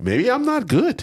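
high, slow self-doubting tone. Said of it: "You're like".

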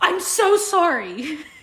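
high, slow, wailing, overly dramatic voice.

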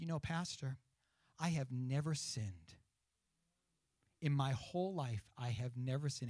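mock-proud tone. A pastor retells an elderly church woman's words to him, imitating a proud tone. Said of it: "she said it with such pride".

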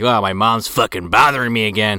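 ordinary talk

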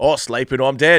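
put-on Australian accent. Repeating the other speaker's quote in an Australian accent. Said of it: "it was more Australian".

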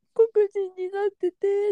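mock crying voice. Retelling a dream, quoting own words to a clerk: retelling own crying. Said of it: "泣きながらめっちゃ説明したのね".

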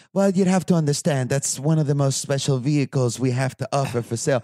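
clumsy, badly butchered British accent. Retelling what a car dealer told him, butchered accent imitation. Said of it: "I'm going to totally butcher the accent".

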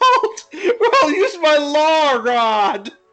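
acted shouting. Acting out a line a movie character yells out, retelling a yell. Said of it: "You can do it".

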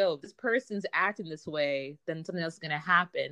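ordinary delivery

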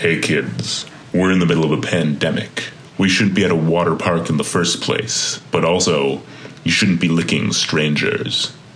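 deep, dramatic crime-show narrator announcer voice. Telling a group of kids at a water park off, in Law and Order announcer voice. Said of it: "I switch to my best Law and Order announcer voice".

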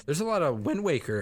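voice cracking up high mid-phrase. Praising a game they love, the speaker's voice cracks mid-sentence. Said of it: "oh my voice cracked".

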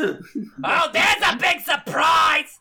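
grating put-on comic voice. Voicing a character during the game, in a Gilbert Gottfried voice. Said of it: "Is that Gilbert Godfrey?".

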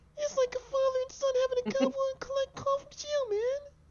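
man's voice, pitched very high. Reading out another person's message in his voice: reading in another man's voice. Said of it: "Let me read in his voice".

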